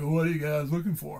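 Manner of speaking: put-on closely mimicked teenage kid voice. Redoing the big kid's question more like he said it: imitating a teenage kid. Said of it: "it's kinda more like".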